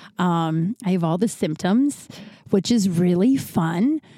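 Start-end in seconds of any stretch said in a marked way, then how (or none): 2.5-4.0 slow, sarcastic delivery. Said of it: "that's sarcasm".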